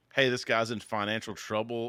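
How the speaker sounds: normal talking voice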